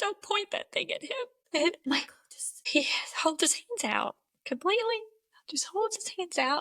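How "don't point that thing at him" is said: mock, high-pitched scream. Retelling shouting at someone pointing a gun: imitating a past scream. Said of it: "I scream".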